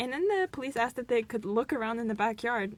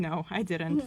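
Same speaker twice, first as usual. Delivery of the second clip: mock unbothered, very calm, composed delivery; 4 semitones lower than usual. Retelling a suspect denying a killing: imitating a calm denial. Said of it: "very calmly".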